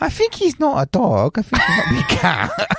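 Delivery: very high, sing-song put-on Chinese accent. Retelling what the owner from China said about her pet: put-on Chinese accent. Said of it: "You are doing the accent".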